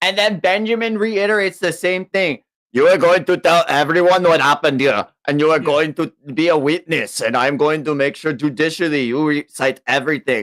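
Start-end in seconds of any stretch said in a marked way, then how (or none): 2.7-10.4 put-on German accent. Retelling a character's lines: put-on German accent. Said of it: "Why are you giving him a German accent?".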